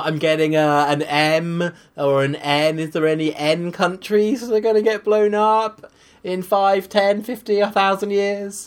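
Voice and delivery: very slow, drawling fortune-teller style voice. Mocking the other speaker's forecasts: imitating Nick doing a prediction. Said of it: "here's my impression of you doing a prediction".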